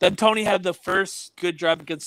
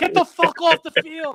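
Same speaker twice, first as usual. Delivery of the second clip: high, angry screaming. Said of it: "And Joe Judge is screaming".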